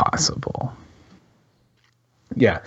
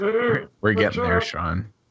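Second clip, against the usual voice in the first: put-on old man voice. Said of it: "I like your old man voice, Dan".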